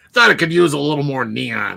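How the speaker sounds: rough, creaky put-on voice. Joking about neon colors, imitating Aaron imitating me. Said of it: "me doing an impression of my s-, of Aaron doing an impression of me".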